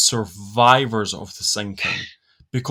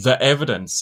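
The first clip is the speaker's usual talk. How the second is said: ordinary delivery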